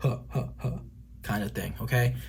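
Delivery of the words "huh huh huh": low, deep, whispery three-beat breathy chuckle. Explaining the rule of only three laughs, deep 'huh' chuckle. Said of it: "it has to be like a deep chuckle".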